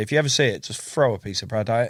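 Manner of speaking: plain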